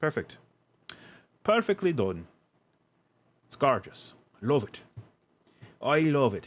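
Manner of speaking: put-on horrible Irish accent. Commenting on their own work as they finish placing it, horrible Irish accent. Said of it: "Apologize for my horrible Irish accent".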